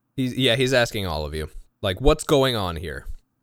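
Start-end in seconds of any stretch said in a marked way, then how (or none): 2.0-3.1 serious tone, less gruff. Voicing Anton asking everyone what's going on: serious, less gruff voice. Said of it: "He sounds much more serious and less gruff".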